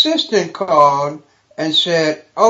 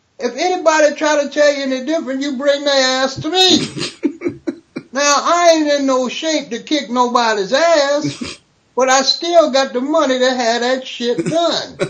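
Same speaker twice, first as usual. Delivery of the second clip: pitched-up tough talk with "ass" drawn out; 8 semitones higher than usual. Retelling what Richard Pryor said after an audition: Richard Pryor impression. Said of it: "I'll say it in his words".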